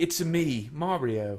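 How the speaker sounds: terrible put-on British accent. Playing an impressions game, saying a given line in a bad British accent. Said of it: "You gotta be British".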